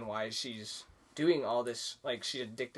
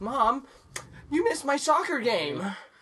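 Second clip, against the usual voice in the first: put-on very high, terrible child-actor delivery; 14 semitones higher, 8 dB louder than usual. Show how the son, the worst actor you have seen, talks to his mom, imitating a terrible child actor. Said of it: "the her son is the worst actor I've ever seen".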